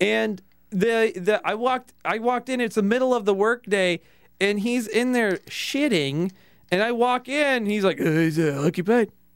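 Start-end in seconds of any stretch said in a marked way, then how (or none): 8.0-9.1 hesitant, faked, disguised voice. Retelling what a coworker said from inside the bathroom: imitating a disguised voice. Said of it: "Trying to disguise his voice".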